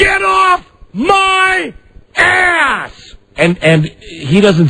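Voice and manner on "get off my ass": very high, very slow, drawn-out hollering. Retelling telling a passing driver off: retelling his own yell. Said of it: "I'm yelling and I said".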